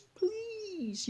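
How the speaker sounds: put-on high-pitched pleading little child's voice. Retelling a granddaughter's video message asking for a doll: imitating a child pleading. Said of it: "you know, like that".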